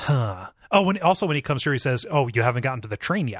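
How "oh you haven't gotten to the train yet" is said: put-on ominous delivery. Retelling a character's line from the book: imitating an ominous line. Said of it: "Like, kind of ominously".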